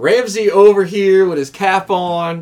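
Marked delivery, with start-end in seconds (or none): none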